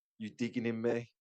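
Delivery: ordinary delivery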